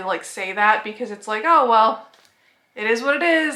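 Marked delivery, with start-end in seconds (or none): 1.5-3.6 mock, very offhand and casual, pitched up. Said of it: "very nonchalantly".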